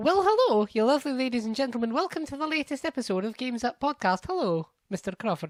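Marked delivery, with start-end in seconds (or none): 0.0-4.3 put-on Scottish accent, pitched up. Host welcoming listeners to a new podcast episode; Scottish accent. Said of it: "why I'm speaking in a Scottish accent".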